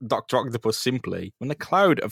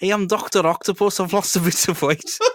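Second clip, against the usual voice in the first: put-on Scouse accent, pitched up higher; 7 semitones higher than usual. Joking about Doctor Octopus's new voice after losing weight, doing Doctor Octopus in a Scouse accent. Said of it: "Doc Ock can't be Scouse".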